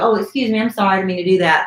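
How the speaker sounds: mock-innocent, put-on sorry tone. Describing pickpockets who bump into people, acting out a fake apology. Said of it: "they kind of bump into you".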